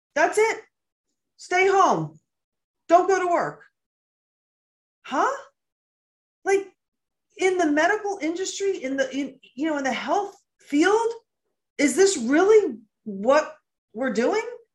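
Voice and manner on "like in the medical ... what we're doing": in shock, stunned. Reacting to how positive cases were handled, in shock. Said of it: "I'm speaking like this because I'm literally in shock".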